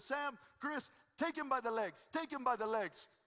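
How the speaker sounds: energetic mild yell in broken English. Retelling the camel guide's orders to the riders: imitating Shaban yelling. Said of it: "so he'd yell at us".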